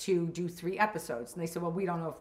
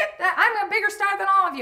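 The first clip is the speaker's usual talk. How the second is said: shrill, very high, loud screaming rant; 11 dB louder than usual. Retelling a performer being fired on set: imitating Tony Clifton screaming. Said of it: "he starts screaming, like".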